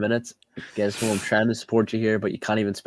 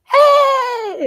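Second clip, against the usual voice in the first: play-acted very high, very loud, drawn-out energetic voice; 10 dB louder than usual. Showing how the voice sounds full of energy: imitating own energetic voice. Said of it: "When I'm full of energy".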